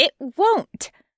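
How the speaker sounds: firm, resolute voice. A woman in a story answering the listener, firm. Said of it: "Her voice is firm".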